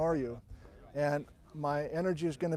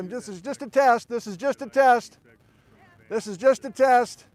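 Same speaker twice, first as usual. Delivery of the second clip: loud, raised, elevated speaking voice; 7 semitones higher, 9 dB louder than usual. Testing the audio for home viewers before addressing a live group: elevated voice. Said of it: "I'm gonna have an elevated voice, kinda like this".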